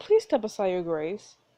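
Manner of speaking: normal talking voice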